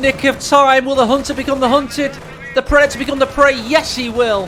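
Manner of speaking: loud, high, hyped caster-style call.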